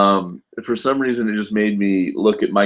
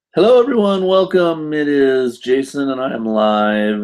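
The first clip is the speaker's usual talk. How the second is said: voice breaking at the start, pitched up; 5 semitones higher than usual. A streamer opens a live stream, greeting everyone, voice cracking. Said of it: "my voice is cracking".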